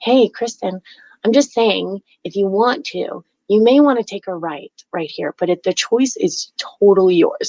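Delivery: sweet, gentle, kindly little voice, no pressure. Acting out a voice that suggests taking a turn, soft sweet whisper. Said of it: "it's such a little whisper".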